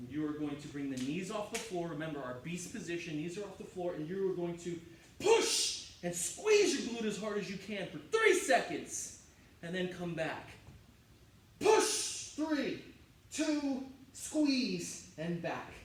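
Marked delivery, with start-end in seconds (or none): 11.6-15.1 high, loud, screamed shouting. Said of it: "Why are you screaming?".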